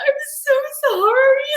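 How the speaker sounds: very high, loud nervous voice. Speaker acts out apologizing when nervous, retelling a high nervous voice. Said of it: "my voice goes so high".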